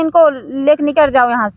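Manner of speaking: ordinary talk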